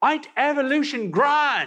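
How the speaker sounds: put-on high, eager Australian accent. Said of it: "in that excited Australian accent".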